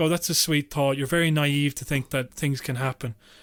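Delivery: ordinary delivery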